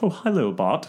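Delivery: all-scared, frightened cartoon-character voice. Quoting a character greeting Bart: Sideshow Bob voice. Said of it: "a Sideshow Bob in The Simpsons".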